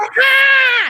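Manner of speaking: high, loud horror-movie-victim shrieking scream. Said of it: "would not shut the fuck up screaming".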